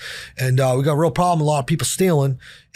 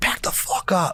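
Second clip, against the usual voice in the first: mock crazed, menacing, slow unhinged whisper; 4 semitones higher, 5 dB quieter than usual. Retelling confronting store security while stealing, imitating acting crazy. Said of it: "and just act crazy".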